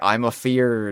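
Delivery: put-on pirate voice. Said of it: "that Kremlin crew member is just talking like a pirate".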